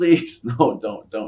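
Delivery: desperate, pleading tone. Retelling how Tommy Dreamer begged someone to stop: imitating Tommy Dreamer begging. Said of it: "He's begging him".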